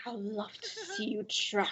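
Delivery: hissed, slithering, taunting snake voice with swooping pitch. Voicing a snake who taunts a player: hissing snake voice. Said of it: "She hisses at you".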